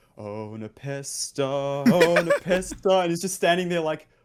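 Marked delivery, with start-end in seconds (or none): 0.2-3.0 slow, drawn-out calling out. Retelling a clip where Connix, filming, calls out to Nepesta: imitating Connix calling out. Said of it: "he started going like".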